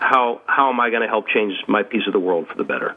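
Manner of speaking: plain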